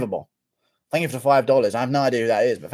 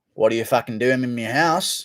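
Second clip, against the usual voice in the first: put-on Australian accent. Trying an impression right after an Australian bit: Anthony Smith impression, still Australian. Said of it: "I was still doing Australian".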